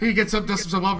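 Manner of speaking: ordinary talk, nothing marked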